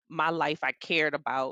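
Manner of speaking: normal talking voice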